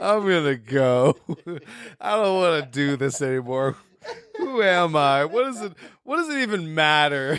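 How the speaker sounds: mock beaten, done-with-it-all, utterly defeated resigned voice. Imitating the bartender character who just left, mock defeated voice. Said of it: "He was so defeated".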